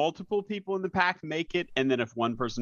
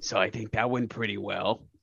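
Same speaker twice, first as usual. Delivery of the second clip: hushed whisper, lower in pitch; 3 semitones lower than usual. Speaking in character, leaning over to another character as they leave: whispering. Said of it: "just whispered".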